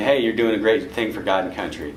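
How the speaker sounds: ordinary talk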